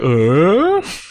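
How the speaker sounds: high, odd, baffled, confused grunt. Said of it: "looked at the gun like".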